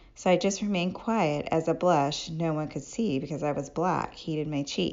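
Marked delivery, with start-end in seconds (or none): none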